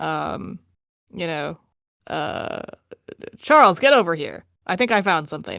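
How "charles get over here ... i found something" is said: loud, swooping call from a distance. Voicing someone deeper in a cave who calls Charles over: calling out from deeper in a cave. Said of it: "a voice calls from, like, deeper in the cave".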